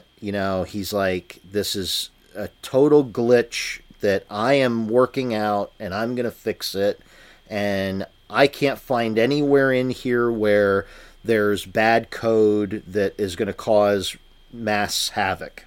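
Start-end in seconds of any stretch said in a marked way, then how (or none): none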